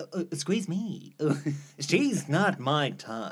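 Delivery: slow, wavering, lovestruck Bollywood film hero voice.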